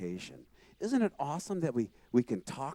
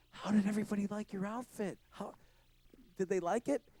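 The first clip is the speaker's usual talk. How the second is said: put-on bubbly, eager, excited voice with raised pitch; 8 semitones higher, 5 dB quieter than usual. Retelling coming home after playing music, imitating excited mom. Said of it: "your mom is so excited".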